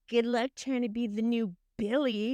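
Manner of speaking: usual speaking voice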